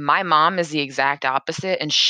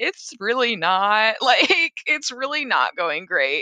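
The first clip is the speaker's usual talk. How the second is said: mock crying, high, blubbering through tears; 7 semitones higher than usual. Speaker retells answering a question about their day: retelling crying while answering. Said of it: "I was like crying, blubbering".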